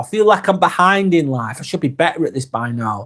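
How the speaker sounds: usual speaking voice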